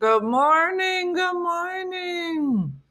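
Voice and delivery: very high voice, speaking through a mouthful. Greeting the audience while eating a cookie: talking with a cookie in mouth. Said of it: "I have a cookie in my mouth".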